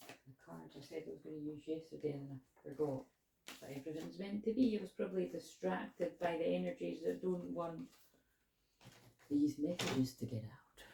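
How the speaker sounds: hushed, very quiet, soft asmr voice. A self-described healer addressing her audience, in an ASMR voice. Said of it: "I've got a bit of an A S M R voice today".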